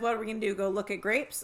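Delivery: plain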